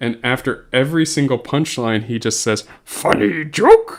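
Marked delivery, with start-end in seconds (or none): 2.8-4.0 very high, loud creature voice. Retelling how a man delivered corny Star Wars jokes, in a Yoda voice. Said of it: "saying them as in a Yoda voice".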